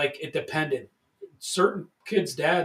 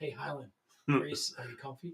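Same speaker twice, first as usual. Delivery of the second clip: creepy, unsettling voice, very close to the ear; 9 dB quieter than usual. Answering what sound is scariest at night, imitating Sal. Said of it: "Sal in your ear".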